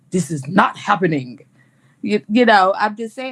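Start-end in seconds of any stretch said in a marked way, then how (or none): 0.1-1.4 put-on deep, angry voice, outburst. Woman acting out how she tells a man she's out; put-on deep voice. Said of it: "I get that deep voice on".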